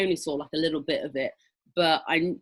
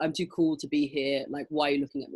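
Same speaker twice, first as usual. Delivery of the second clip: bored, too-cool, super deadpan monotone, flat pitch; 4 dB quieter than usual. Showing the other side of a stage style: super deadpan. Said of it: "super, super deadpan".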